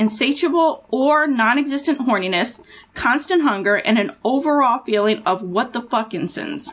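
ordinary talk

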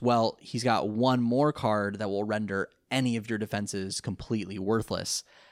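plain

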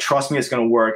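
ordinary talk, nothing marked

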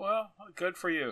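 sincere words in a dry, deadpan, sarcastic tone. Answering another speaker who gives the episode a five: sarcastic-sounding though sincere. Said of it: "sound extremely sarcastic".

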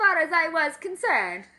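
put-on Italian accent. Reading a character's quote from the movie aloud, in a fake italian accent. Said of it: "That is so Italian".

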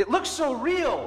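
put-on very high, shrill, drawn-out, shocked child's shout. Retelling a kid at the bear glass calling to his mom: imitating a kid shouting. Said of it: "and he shouts".

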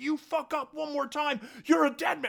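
very high, shrill screaming. Recounting people screaming at a sobbing, complying man, retelling people screaming at him. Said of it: "they're screaming at him".

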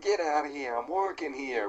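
put-on New York accent. Retelling a construction foreman's line from a favorite joke, New York accent. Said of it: "with his New Yorker accent".

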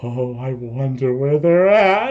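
slow, altered, strange and unrecognizable voice. A narrator voices a figure stepping down by the stone pillars, in a changed, unfamiliar voice. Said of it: "a voice that doesn't sound like Telomere anymore".

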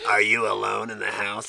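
distorted, low, threatening voice-changer voice. Recalling threatening phone calls, the speaker imitates the voice changer's voice. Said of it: "I had a voice changer that did this voice".

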